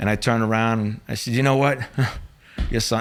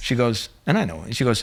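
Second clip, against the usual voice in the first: ordinary talk, nothing marked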